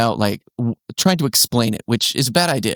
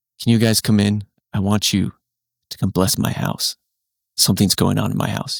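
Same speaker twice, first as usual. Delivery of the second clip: flat voice, lower; 3 semitones lower than usual. Retelling what a lone woman outside said at night: imitating a flat tone. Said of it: "in kind of this flat tone".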